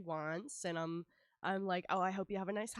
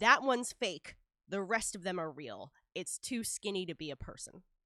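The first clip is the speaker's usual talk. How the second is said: put-on loud, confident, self-assured tone; 5 dB louder than usual. Retelling a man pointing at him and calling him fake: retelling a loud confident declaration. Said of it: "he says very loudly, like declarative".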